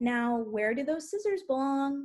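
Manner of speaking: gentle, sugary, sweet teacher-like voice. Demonstrating how a teacher might stop a child with scissors: nice, sweet voice. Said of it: "in maybe a really kind of nice or sweet voice".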